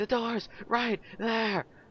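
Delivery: high, slow mock yell.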